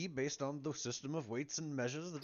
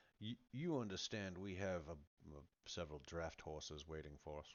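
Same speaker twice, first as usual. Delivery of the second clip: hushed, half-whispered, under the breath; 10 semitones lower, 13 dB quieter than usual. In a role-play scene, a player speaks to Jaren while Jaren is talking: half-whispering. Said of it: "I'm going to kind of whisper to you".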